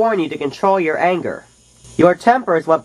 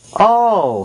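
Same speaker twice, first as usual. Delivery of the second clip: groaning. Narrator reads Billy's reaction as Oscar insults his friends: groaning. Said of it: "groaned Billy".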